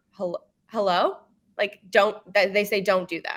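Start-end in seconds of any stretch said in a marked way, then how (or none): 0.2-1.2 upward inflection on hello. Showing a way to answer the phone: upward inflection on hello. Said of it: "an upward inflection".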